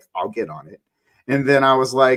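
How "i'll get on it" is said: low, dead serious delivery. Retelling a meet and greet reply about joining the podcast: imitating a dead serious tone. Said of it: "he looked at me dead ass serious".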